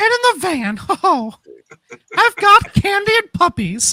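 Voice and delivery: put-on mascot voice, very high and swooping. Asked by another speaker to show the mascot voice: put-on Buc-ee mascot voice. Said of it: "Show the people your Buc-, Buc-ee voice".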